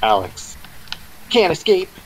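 called out in a weird game-like tone, high, swooping. Asking if anyone remembers Street Fighter 3, Third Strike; imitating Alex from Street Fighter. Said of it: "Why did I say that in such a weird tone?".

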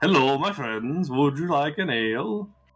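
put-on Swedish accent. Arguing dwarves should sound Swedish, playing a dwarf offering ale; put-on Swedish accent. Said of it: "Dwarves should all speak like Swedes".

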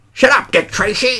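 high-pitched, pint-sized, tough-guy gangster goblin voice. Showing the attempted gangster voice that comes out like a goblin. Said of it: "like a gangster".

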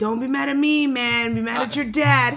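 loud yell across a distance. Recalling a Big Daddy scene, the speaker does Adam Sandler yelling at a guy on the street. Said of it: "Adam Sandler yells to this fucking guy".

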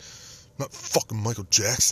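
put-on slow, angry tough-guy voice. Recalling a guy who got up mad and walked away: retelling an angry retort. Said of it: "Jay got up and he was all mad".

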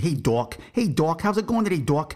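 put-on New England accent. Retelling how a company XO greeted the speaker, thick New England accent. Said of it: "He had a really thick New England accent".

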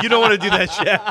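words spoken through laughter. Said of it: "I said".

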